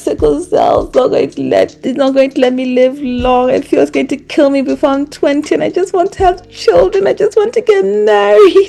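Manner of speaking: high, tearful, crying voice, pleading. Retelling what you said to your doctor while crying at the clinic: retelling tearful words. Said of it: "I'm at the clinic and I'm crying".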